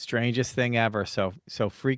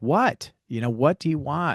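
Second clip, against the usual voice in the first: mock irritated, annoyed yell; 3 semitones higher than usual. Retelling answering a voice that called through the closet at night: retelling own scream. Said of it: "I'm screaming back".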